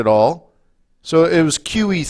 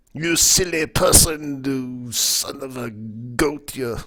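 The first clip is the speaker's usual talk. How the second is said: put-on outrageous, taunting, drawn-out, over-the-top French accent; 8 dB quieter than usual. Mocking another speaker in the Monty Python taunter's outrageous French accent. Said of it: "my outrageous accent".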